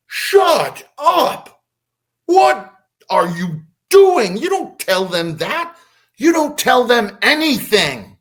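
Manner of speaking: high-pitched, slow, angry scream. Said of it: "screams at him".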